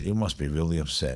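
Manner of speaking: very quiet, soft-spoken delivery. Retelling what the lady in the next seat said: imitating someone speaking quietly. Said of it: "real quietly".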